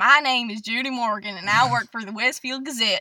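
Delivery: put-on loud Southern accent. Playing Judy Morgan of the Westfield Gazette, introducing herself: Southern accent. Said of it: "They're all Southern".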